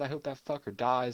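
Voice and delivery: ordinary talk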